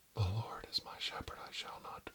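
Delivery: soft, breathy whisper right at the ear. Trying something on someone, close to their ear, telling them to relax: whispering. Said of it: "I'm gonna whisper in your ear".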